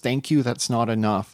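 ordinary delivery

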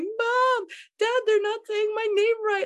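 put-on very high scream in a five-year-old child's voice. Retelling a childhood moment at age five: imitating a child screaming. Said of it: "screaming at my mom".

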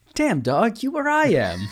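very high, swooping, wholesome gee-whiz voice. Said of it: ""Golly gee" kind of voice".

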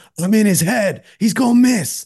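shrill, very high, loud taunting scream. Recalling trash talk at RJ's free throw in a Raptors-Knicks game, retelling Julius Randle screaming. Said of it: "Julius Randle is just screaming".

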